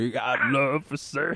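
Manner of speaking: goofy, silly puppet voice. Acting out Gene as a demon guy at someone's door after a knock, silly Gene Muppet voice. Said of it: "silly ass voice".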